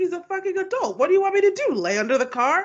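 high, fed-up, incredulous, exasperated tone. Retelling a reply while being yelled at: imitating an exasperated retort. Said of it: "Ryan's like".

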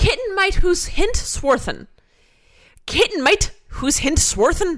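put-on angry Scottish-Irish accent. Repeating a phrase when asked to do it again, in an angry Scottish-Irish accent. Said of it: "What accent is that?".

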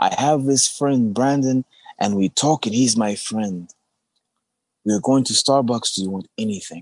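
put-on elderly man voice.

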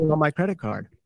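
put-on American accent. Teasing another speaker about accents, showing what they'd have said, in a put-on American accent. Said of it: "That would have been an American accent".

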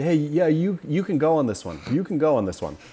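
loud high-pitched yelling. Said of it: "was yelling at him".

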